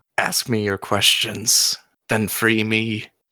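screeching, grating voice like a trapped being. Narrating a role-play scene, voicing another figure in a screeching voice. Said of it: "a screeching voice that comes out as".

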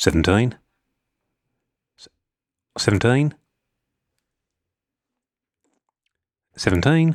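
seventeen said in a New Zealand accent. Showing listeners the easiest word for a new zealand accent, new zealand accent. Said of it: "17 is the easiest word to do with a New Zealand accent".

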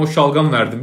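normal talking voice

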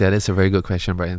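asmr-style voice. Speaker repeats praise of the other speaker's question, in an ASMR voice. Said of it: "ASMR voice".

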